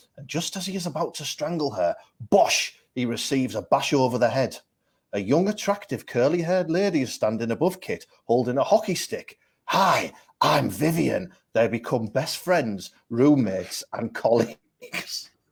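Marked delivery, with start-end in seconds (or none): 9.6-11.3 rough, creaky, raspy voice. Retelling a story's plot, voicing the rescuer introducing herself: Julia Roberts impression. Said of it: "[name]'s impression of Julia Roberts?".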